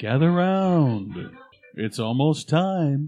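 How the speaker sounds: slow, drawn-out showman announcer voice. After a three-two-one count, calling the kids to gather round, in announcer voice. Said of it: "in your announcer voice".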